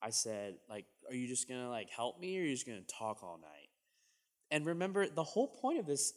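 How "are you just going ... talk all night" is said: mean, fast, swooping sarcastic tone. Retelling what he said to his best friend at a party: a sarcastic, mean remark. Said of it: "in the most sarcastic and mean way possible".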